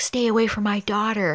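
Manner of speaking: acted-out angry father voice. Retelling a movie scene where a dad warns the boyfriend: imitating a dad yelling. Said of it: "yelling at Mark Wahlberg".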